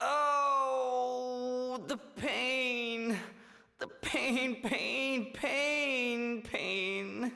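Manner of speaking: badly faked, put-on groaning in pain. Calling the prison guard over, fake pain groaning. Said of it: "here goes".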